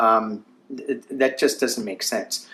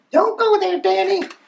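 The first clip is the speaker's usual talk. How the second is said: put-on shrill little scream, very high screeching; 4 dB louder than usual. Voicing a duck that warns the speaker off a topic: imitating Psychic Duck screaming. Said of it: "Psychic Duck is screaming at me".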